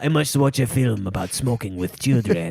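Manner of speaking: put-on French accent. Joking about France with a co-host, mimicking a Frenchman in a put-on French accent. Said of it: "you shouldn't have like a clearly French accent".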